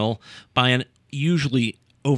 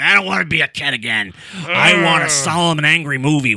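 mock cranky old man voice, higher and louder; 5 semitones higher, 7 dB louder than usual. Mocking imagined film critics: imitating a cranky old man. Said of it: "who's the cranky old man who's like".

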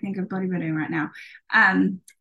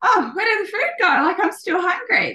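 high, fast, confused, bewildered voice. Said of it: "you're like".

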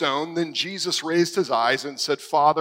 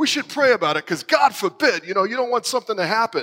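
put-on Bronx accent, pitched up; 6 semitones higher than usual. Imitating a friend from the prayer group: Italian-American Bronx accent. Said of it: "who's Italian and from the Bronx".

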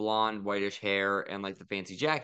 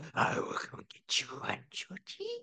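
whispered, breathy, creepy clown voice; 6 dB quieter than usual. Showing off voices he can do, in a Pennywise voice. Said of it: "Why does Pennywise sound the same".

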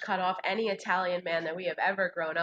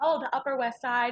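plain

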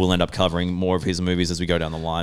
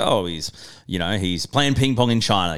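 normal talking voice

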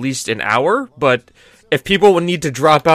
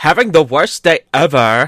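put-on twelve-year-old girl voice. Doing a line in the voice of a 12-year-old girl. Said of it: "I guess I have to do this in the voice of, like, a 12-year-old girl".

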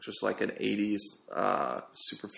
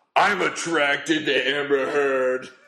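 put-on slow, drawn-out drunken truck driver voice. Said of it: "I hope I didn't say it like a drunken truck driver".

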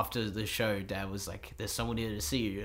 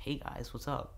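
put-on full-on American accent, quieter; 4 semitones higher, 5 dB quieter than usual. Retelling their childhood self greeting new schoolmates, in an american accent. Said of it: "I had a full-on American accent".

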